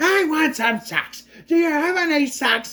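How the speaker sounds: very high, annoying, nonstop shout. Complaining about an annoying movie voice, the speaker does a Gilbert Gottfried shouting impression. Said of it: "Gilbert Gottfried were just shouting about socks".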